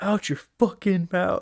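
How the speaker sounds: high-pitched, slow, mad, furious delivery. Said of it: "he sounds like he's fucking mad".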